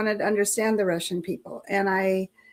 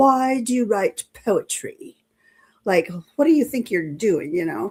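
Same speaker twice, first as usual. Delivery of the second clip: slight put-on British accent. Retelling what he asked in an end-of-class interview, in a little British accent. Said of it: "in his little British accent".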